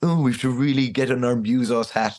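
put-on snobby, pompous, snooty music-critic air.

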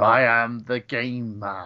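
flat, droning monotone with no pitch lift. Describing how Triple H always plays the same character, monotone Triple H impression. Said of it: "he's always very monotone with".

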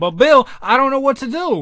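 very loud, high-pitched, plain speaking voice. Retelling a scene from Fat Albert: imitating Kenan Thompson. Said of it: "He's like".

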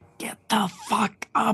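high, urgent stage whisper. A player's character pokes a sleeping companion with a staff, trying to whisper. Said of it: "And I try to whisper".

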